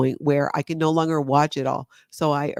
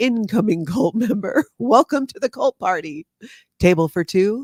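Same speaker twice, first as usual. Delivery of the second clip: mock host announcer voice, loud and high; 6 semitones higher, 5 dB louder than usual. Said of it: "So she said that every time".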